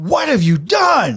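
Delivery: put-on character scream. Running out of the town master's hall toward the group: Harbin Wester screaming. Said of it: "screaming like".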